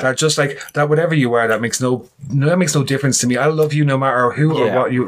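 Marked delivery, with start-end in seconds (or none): none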